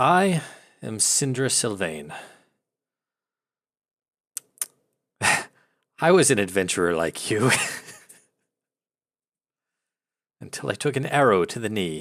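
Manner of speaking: dry, raspy, rasping voice. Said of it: "dry, raspy voice".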